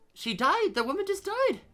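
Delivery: high, loud shocked outcry.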